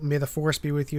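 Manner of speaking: plain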